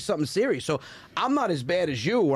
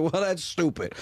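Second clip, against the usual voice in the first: ordinary talk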